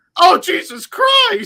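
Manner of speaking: shrill, very high, very loud gut-reaction outburst. Retelling a friend's reaction to a wrestling clip: Ricky reaction impression. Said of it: "my best impression of a Ricky reaction".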